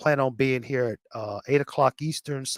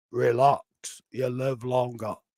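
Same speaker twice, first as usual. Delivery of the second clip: put-on Austrian accent. Quoting a wise man's advice to relax, in a Schwarzenegger impression. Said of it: "that's the only impression I can do of Schwarzenegger".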